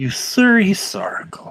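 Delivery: very sharp whispered female voice. Storyteller voices a character's line at the episode's end, in a very sharp female voice. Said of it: "you hear a very sharp female voice say".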